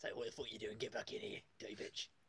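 horrible, sinister, put-on cockney mobster voice. A player addressing another during an online game, horrible cockney mobster voice. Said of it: "horrible cockney mobster".

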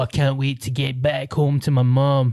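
exaggerated, clumsy put-on Scottish accent. Mocking how Scottish people talk, in an exaggerated Scottish accent. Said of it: "It's like Scottish people being Scottish".

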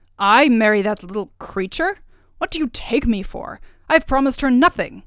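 loud, indignant, protesting outcry. The king, told to marry Princess Turritella at once, cries out. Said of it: "cried the king".

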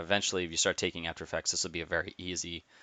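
rushed, very fast speech.

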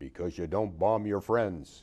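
loud, great big, weighty gruff voice. Quoting the man's answer to their question, in a big gruff voice. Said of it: "in his great big gruff voice".

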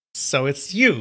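contemptuous, scornful, sneering. Narrator voicing Yu Changhai as he recognizes the young hunchback, sneering. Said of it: "he sneered".

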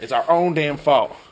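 ordinary talk, nothing marked

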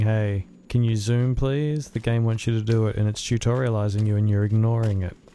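plain

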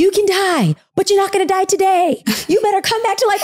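acted out, very high, urgent shouted yell. Retelling giving CPR to a man while an ambulance comes: retelling a yell. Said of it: "I'm like yelling at him".

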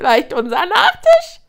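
very high, shrill, loud, cackling, jeering voice. A second hyena, peering over the hill, speaks, cackling. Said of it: "keckerte eine andere".

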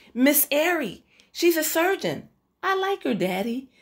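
very high, imploring, beseeching tone. Yasmin answers her father's question about their guest, beseeching. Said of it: "said Yasmin, beseechingly".

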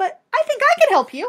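cheery, very high-pitched voice. Narrator reads an old woman at the front door, said brightly. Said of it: "she said brightly".

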